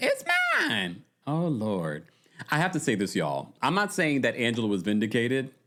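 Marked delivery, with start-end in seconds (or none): 0.0-1.0 very high, squeaky little voice. Reacting to a video, mimicking a man's line: imitating George's high squeak voice. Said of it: "Not the high squeak voice".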